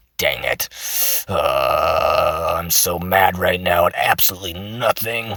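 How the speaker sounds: rough, menacing, threatening voice. Demonstrating vocal examples, speaker acts mad in a rough, threatening voice. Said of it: "I sound super threatening because my voice is rough".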